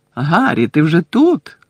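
glad, joyful, exclaimed cry. Reading a character greeting a newcomer on arrival; joyful exclamation. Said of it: "радісно вигукнув Бекмен".

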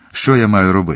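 usual speaking voice

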